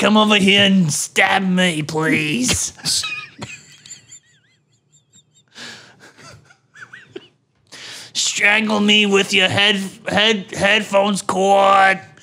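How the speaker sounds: put-on elderly woman's smoker's voice.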